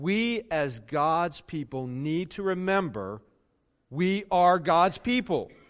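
very slow, deliberate, every word spaced out. Speaker announces they will say it slowly so listeners get it, said slowly. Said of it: "I'm going to say it slowly".

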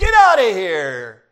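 furious, very loud, angry yelling shout. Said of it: "And she again yelled".

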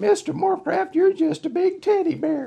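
very high-pitched voice. Retelling what a woman said as she hugged him in front of everybody, in a high voice. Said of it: "in a high voice she said".

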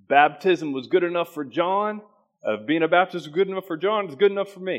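put-on Southern country accent. Speaker quotes what people said while the speaker grew up: southern country accent. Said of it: "in that good old Southern country accent".

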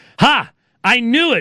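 very slow triumphant voice. The sound guy reacts to the pastor's admission, with a triumphant declaration. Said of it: "Bray declared triumphantly".

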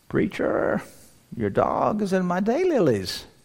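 high-pitched, slow, quavering, trembling little lady voice. Preacher retelling a neighbor's call about his dog, imitating her trembling voice. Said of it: "She called me with her trembling voice".

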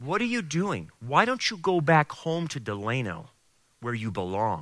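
devil-like whispering voice. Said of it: "the devil will whisper into your ear".

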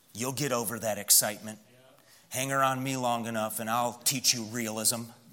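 low, soft sarcastic tone. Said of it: "Pastor, you're being sarcastic".

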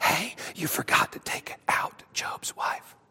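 hushed, whispered demon voice. Voicing a demon who points out a missed target: demon whispering. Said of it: "a demon whispering to Satan".

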